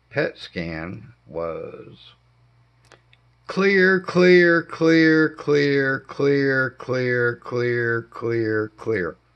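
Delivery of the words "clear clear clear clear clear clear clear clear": slow, loud repetition that keeps ringing on. Showing how the doctor's words kept ringing: echoing repetition like ringing in ears. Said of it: "that's exactly the way I heard it".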